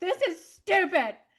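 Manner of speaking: very high-pitched, dramatic tantrum. Imagining how the speaker would have reacted back then: mock tantrum. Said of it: "would have thrown a whole fit and been like".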